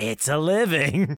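creepy, eerie, unsettling, spooky put-on voice. Describing the trash compactor elephant in the Flintstones movie facing the camera, put-on creepy voice. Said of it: "creepily goes".

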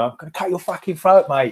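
put-on Millwall-area accent. Redoing a quoted threat after being asked about the accent: Millwall accent. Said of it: "Millwall Mancunian".

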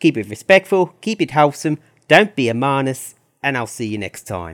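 put-on New Zealand accent. Quoting a Formula One YouTuber's usual video sign-off, in an attempted Kiwi accent. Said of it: "that was me trying to do a Kiwi accent".

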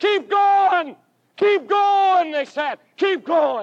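high, urging crowd call-back shouts. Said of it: "They began to shout back at him".

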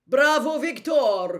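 booming, very loud and high. Karkaroff calls out to Victor in front of the whole hall, booming loudly. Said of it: "boomed Karkaroff, so loudly that everyone could hear him".

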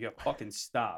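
ordinary talk

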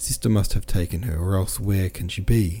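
plain

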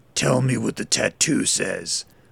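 low, gravelly, commanding voice. Narrator reads Berkey ordering Lily, in a gravelly commanding voice. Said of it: "commanded in a gravelly voice".

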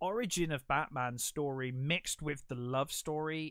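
ordinary talk

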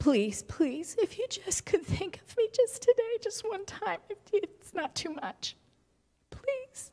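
soft, high-pitched, meek, timid, begging delivery. Showing how people pray as if they have no rights: imitating a begging prayer. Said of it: "We pray like we're asking somebody who is evil to give us just a little crumb".

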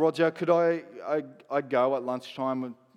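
plain

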